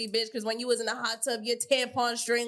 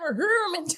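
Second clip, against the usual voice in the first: put-on country accent, higher and louder; 7 semitones higher, 4 dB louder than usual. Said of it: "that accent is crazy".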